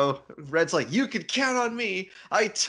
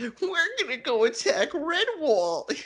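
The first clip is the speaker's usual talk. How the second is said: squeaked out in a goofy, weakling voice; 8 semitones higher than usual. Retelling a Redwall story, voicing a character heading off to attack, in Wimp Lo voice. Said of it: "I realized where that voice came from now".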